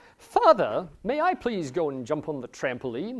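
put-on formal voice, jokingly proper, overly polite, tongue-in-cheek. Retelling how Owen asked to jump on the trampoline: imitating Owen's tongue-in-cheek formal voice. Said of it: "He'd put on a voice for it and everything".

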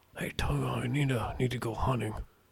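very quiet, hushed, very soft murmur. Retelling a movie scene, doing a Nicolas Cage impression. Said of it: "that sounds good".

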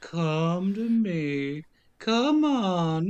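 weird, eerie, haunting ghost voice. Retelling how she called to him from the TV, weird ghostly voice. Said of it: "she's doing it in this like weird ghostly voice".

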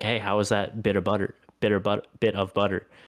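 ordinary talk, nothing marked

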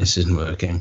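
ordinary talk

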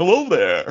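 spooky vampire voice. After introducing self and brother, greeting listeners: spooky Dracula vampire voice. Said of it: "is that your spooky voice?".

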